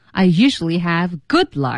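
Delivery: good stressed heavily. Bilingual chat about luck, showing where to put emphasis: stress on good. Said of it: "在这儿我们说good 带一点声音 ... 要强调。 Emphasize".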